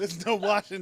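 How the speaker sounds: loud, high-pitched laughing outburst.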